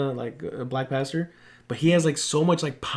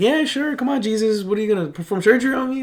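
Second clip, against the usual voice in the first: high, scoffing, sarcastic, mocking taunt; 8 semitones higher, 3 dB louder than usual. Retelling how a woman answered a prayer offer: imitating someone mocking. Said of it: "she was, like, mocking him".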